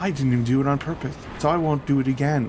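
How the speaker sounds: play-acted sassy, cheeky retort, all sass. Retelling his reply to a man who warned him; retelling a sassy reply. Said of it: "And now I sound all sassy".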